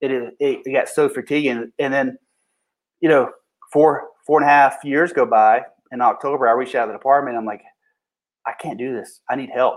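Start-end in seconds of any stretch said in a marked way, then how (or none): 8.5-9.8 put-on pleading, begging tone, much quieter. Retelling how he reached out to the department, re-enacting a plea for help. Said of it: "And I was begging".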